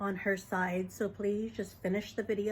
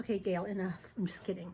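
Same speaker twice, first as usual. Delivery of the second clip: ordinary talk, nothing marked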